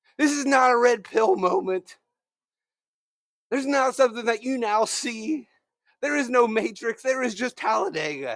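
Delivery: fired-up, heated rant, hammering each point emphatically. Flipping out on a Thursday morning, screaming at the listener. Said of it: "I am sorry that I am screaming at you right now".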